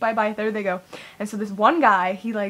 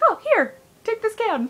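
very high, sugary, sweet motherly voice; 12 semitones higher than usual. Retelling mom handing over a can: imitating mom being nice. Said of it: "she was actually like".

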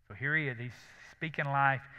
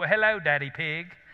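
put-on booming, very loud child voice with British accent; 4 semitones higher, 8 dB louder than usual. Speaker retells how the boy comes in and greets him: boy's British accent. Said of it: "comes in there with his British accent and says".

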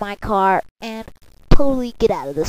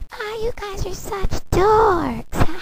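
very high, slow, drawn-out, mocking girl's voice; 12 semitones higher, 6 dB quieter than usual. Voicing a girl who makes fun of the guys: mocking girl voice. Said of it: "how the girls are gonna make fun of us".

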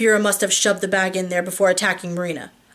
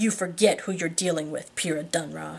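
through clenched teeth, quieter; 2 semitones lower, 6 dB quieter than usual. A man speaking to the woman he is torturing, through clenched teeth. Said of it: "Adam says through clenched teeth".

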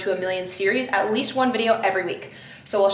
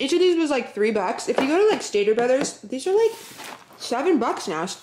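pitched up, chewing, mouth full of food; 5 semitones higher than usual. Showing the cereals they bought, the speaker talks while eating a cookie. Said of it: "sorry, I'm eating a cookie".

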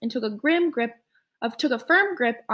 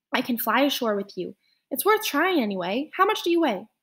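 ordinary delivery

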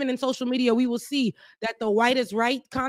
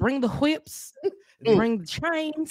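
sarcastic put-on Southern accent; 3 semitones higher than usual. Quoting what other people said, in a mocking Southern accent. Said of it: "we're going to make it real southern".

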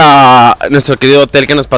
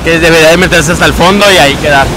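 ordinary delivery

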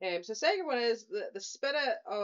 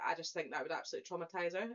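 ordinary delivery

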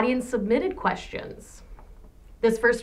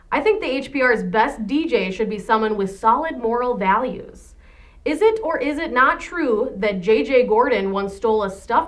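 ordinary talk, nothing marked

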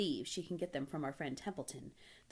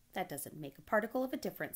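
plain reading voice

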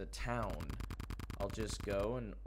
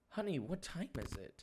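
put-on woman's voice, much higher pitched; 8 semitones higher than usual. Acting out a late call, the mom answers her sleepless child, mother's voice. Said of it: "Do I gotta do a woman's voice?".

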